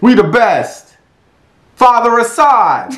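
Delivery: yelling high-pitched at full volume. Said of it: "I do, uh, [name]".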